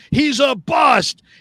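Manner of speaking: put-on shouting. Retelling what people shout about a player: imitating people shouting. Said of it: "shouting at the top of their lungs".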